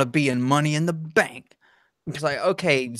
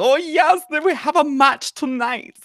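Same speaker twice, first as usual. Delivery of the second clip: put-on effeminate accent, much higher; 13 semitones higher than usual. Friends discussing German accents; speaker imitates Heidenreich in an effeminate German accent. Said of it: "picture every time you think of a German accent".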